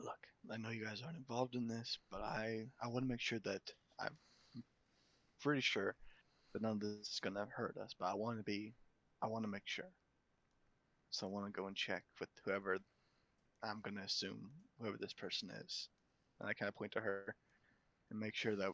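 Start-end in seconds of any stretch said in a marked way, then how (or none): 0.0-15.9 speaking in a whisper. Leaning in to two companions so she doesn't hear: whispering. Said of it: "kinda whisper so she doesn't hear".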